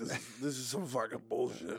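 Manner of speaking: put-on fed-up New York accent. A former DM voicing their player character, jaded New York guy voice. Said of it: "New York guy who's over it".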